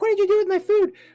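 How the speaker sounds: shrill, very high, very loud, frantic freaked-out yell. Retelling how the executive chef confronted the speaker, imitating a freaked-out yell. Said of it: "freaked out, and was running around the kitchen".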